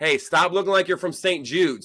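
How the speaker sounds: high, loud yell. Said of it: "I yelled out".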